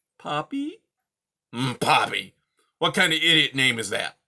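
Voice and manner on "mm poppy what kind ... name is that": put-on loud, gruff, growling old coot voice. Reading a story aloud, voicing the old beast hearing the mouse's name: growling Aerith voice. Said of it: "waking an old coot like me in the middle of the day and asking for my help. / waking an old coot like me in the middle of the day and asking for my help. / He growled. / waking an old coot like me in".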